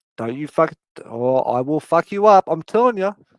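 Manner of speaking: cat character voice. Retelling having the cat's belly touched, voicing the cat. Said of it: "And she's like".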